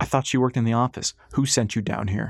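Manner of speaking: ordinary delivery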